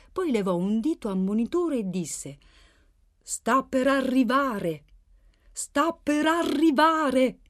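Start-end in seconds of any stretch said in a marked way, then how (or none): 3.3-7.3 eager, deliberate, excited, raised and high. He raises a warning finger and speaks, in an excited tone. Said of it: "Aveva un tono eccitato".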